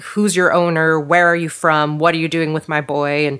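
acted angry yelling in a man's voice. Retelling a scene where a man with a shotgun questions her, imitating a man yelling. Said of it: "he's like yelling at her".

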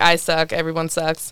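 put-on depressed tone. Retelling a film scene where a character sits on a bench: imitating a depressed character. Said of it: "May is sitting there being depressed".

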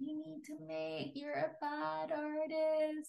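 high, soft, slow, critical voice. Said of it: "hear that little voice".

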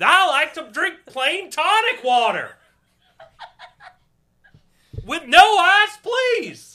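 deliberate very high, loud, drawn-out puppet-frog voice. Imitating a friend yelling his drink order: part Colin, part Kermit the Frog voice. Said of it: "That's like part Colin, part Kermit the Frog".

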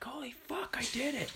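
mock, very high, triumphant victory shout. Climber recounts reaching the top, far above the belayer: retold yelling. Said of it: "I'm pretty sure I just yelled".

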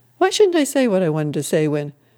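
plain reading voice

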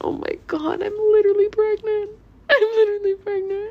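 very high, loud, put-on sobbing wail. Recounting telling her mom she was pregnant, retelling sobbing. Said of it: "Sobbing my eyes out".

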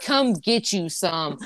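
movie-gangster swagger, tough gangster delivery. Trying out a movie power line, gangster delivery of a movie line. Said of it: "I wanna be, like, all gangster about it".

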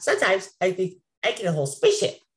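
low-pitched cartoon character voice. Doing an impression after being asked for Jerry Gourd: Jerry Gourd impression. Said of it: "And Jerry?".

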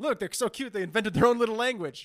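accent from Belarus. Showing off the twins at a good price, speaking in a Belarusian accent. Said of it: "why you became Belarusian".

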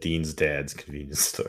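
ordinary delivery

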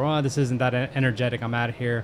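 ordinary talk

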